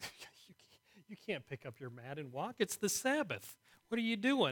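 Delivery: high-pitched outburst of sheer incredulity. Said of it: "Kinda incredulous".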